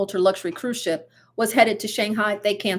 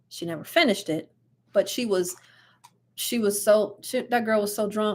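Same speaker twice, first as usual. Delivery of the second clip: ordinary delivery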